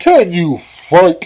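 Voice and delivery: booming, very loud roaring troll voice. The Troll challenges Minnikin: roaring troll voice. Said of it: "Roared the Troll".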